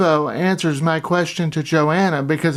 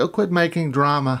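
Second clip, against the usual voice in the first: plain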